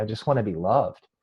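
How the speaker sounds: put-on tearful, breaking voice. Retelling what a woman said with tears welling up: breaking down. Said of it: "she kind of, like, just broke".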